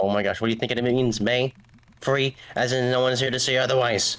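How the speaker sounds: annoyed, fed-up, exasperated, irritated tone. Voicing a game character asked if the cola is free: irritated character line. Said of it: "The guy got so irritated he broke character".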